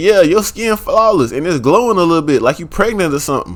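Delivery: ordinary delivery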